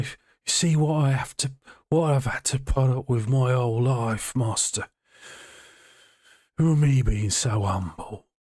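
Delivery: sneer on every word. Voicing a character who sneers at a player while speaking to Strahd: sneering Cyrus. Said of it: "he'll just sneer at you".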